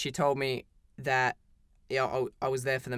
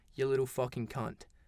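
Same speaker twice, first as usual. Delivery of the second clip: put-on under-breath mutter; 4 dB quieter than usual. Retelling walking out of a classroom argument, imitating muttering under breath. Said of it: "under my breath I was like".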